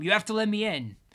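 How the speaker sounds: loud, high-pitched, full-throated yell. Locked out, a man at the apartment door demands to be let in: shouted. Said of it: "shouted Tom".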